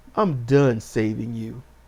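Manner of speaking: deep, very low, menacing voice with wounded anger. Retelling a scene, quoting a man who turned on a sinister, pained, angry voice. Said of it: "he turned on this sinister, pained, angry voice".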